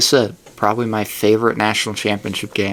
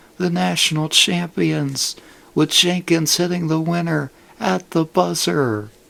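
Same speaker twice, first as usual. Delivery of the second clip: put-on TV play-by-play announcer voice, pitched higher; 8 semitones higher than usual. Retelling a championship-winning buzzer shot: Jim Nantz impression. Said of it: "my best Jim Nantz impression".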